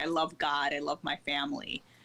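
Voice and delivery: normal talking voice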